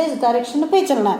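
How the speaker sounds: ordinary delivery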